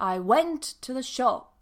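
"went" and "shop" both stressed. English sentence stress lesson with an example: stress on went and shop. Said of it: "So went and shop are stressed and the others are weak".

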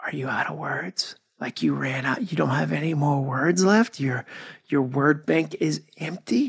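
grave, somber, serious hushed whisper. Quoting a man who paused and got serious, whispered. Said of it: "he kind of whispered it. He was like".

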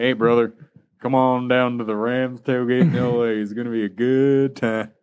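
loud southern American twang throughout. Retelling a man met in line inviting the speaker to a tailgate, southern accent. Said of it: "Why does he have a southern accent?".

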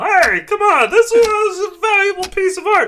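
shrill, indignant, very loud, high angry shout. Voicing bystanders whose painting was smashed by a runner: yelling angrily. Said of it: "You hear them yell".

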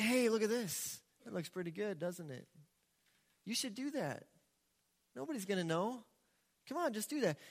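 coaxing, wheedling, enticing tempter voice. Acting out sin enticing the listener to do something: voicing sin as a tempter. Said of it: "It can say".

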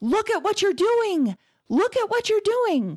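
loud yell at high pitch. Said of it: "and yelled".

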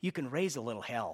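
soft, hushed, confiding stage whisper. Retelling what an older lady said about the preaching: imitating someone half-whispering. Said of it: "kind of whispered".

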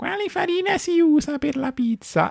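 very high, grating, needling, mocking tone. Mimicking the question people ask most often, in a mock-annoying questioning tone. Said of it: "l'ho voluto fare in un tono un po' fastidioso".

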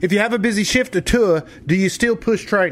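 put-on Australian accent. Relaying someone's question to the other host in an Australian accent. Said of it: "That's my Australian accent".

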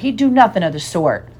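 plain

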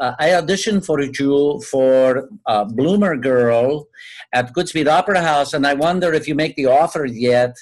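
terrible fake Puerto Rican accent. Retell disguising your voice on a call to Mr. Pincus about an audition, bad Puerto Rican accent. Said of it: "it was a terrible accent".

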